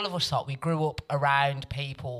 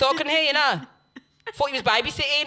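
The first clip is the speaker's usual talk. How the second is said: put-on scolding voice, higher and louder; 12 semitones higher, 5 dB louder than usual. Retelling how mum caught her at the top of the stairs: imitating her mum telling her off. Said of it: "My mum was standing at the top of the stairs saying".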